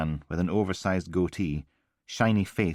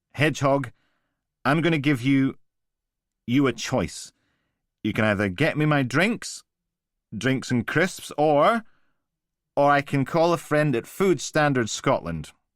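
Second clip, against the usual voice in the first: put-on police officer voice, pitched up, words slurring; 7 semitones higher, 3 dB louder than usual. After five or six pints, a man addresses the barman in his best police officer voice. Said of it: "put on his best police officer voice".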